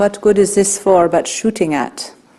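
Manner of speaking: put-on Israeli accent. Quoting a man from a video standing in military posture, in a thick Israeli accent. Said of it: "in his very thick Israeli accent he said".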